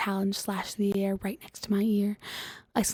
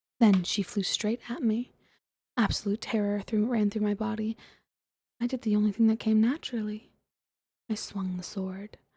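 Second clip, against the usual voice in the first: ordinary delivery, nothing marked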